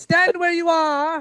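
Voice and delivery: piercing, very high pitch. A game master voices an unseen figure calling from the trees: high-pitched voice. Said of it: "you hear a a high pitched voice".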